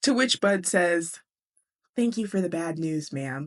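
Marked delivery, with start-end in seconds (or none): 2.0-3.5 put-on sarcastic kid voice. Retelling a book scene, quoting Bud's reply: imitating Bud, put-on sarcasm. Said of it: "he's so sweet, but so sarcastic".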